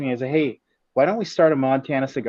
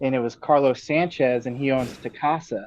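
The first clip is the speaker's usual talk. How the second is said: usual speaking voice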